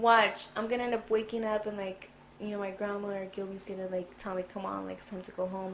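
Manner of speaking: usual speaking voice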